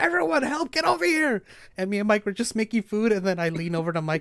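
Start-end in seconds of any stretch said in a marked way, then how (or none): 0.0-1.4 frantic, very high-pitched, panicked shout. Retelling how she called everyone over to help, imitating panicked shouting. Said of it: "she's like panicking".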